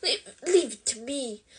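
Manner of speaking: hissing whisper. Harry holds Ron back from Malfoy and speaks into his ear, hissed whisper. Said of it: "he hissed in Ron's ear".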